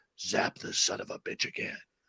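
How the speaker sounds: very soft, hushed demonic whisper. Retelling a background voice heard after a doctor says clear, demonic voice. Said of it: "you hear this demonic voice".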